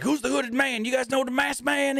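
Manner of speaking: acted, very high, heated, angry, demanding voice. Speaker retells a man confronting the announcers, retelling an angry demand. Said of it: "he's getting all mad".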